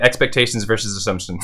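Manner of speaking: fast, rushed, rattled off in one go. Speaker tries again to pronounce a tricky phrase, saying it fast. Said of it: "I'm gonna say it fast now".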